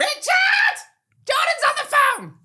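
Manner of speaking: very high-pitched, long, drawn-out calling holler. Recalling phoning a friend's house, imitating his mum calling out. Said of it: "And then she'd go".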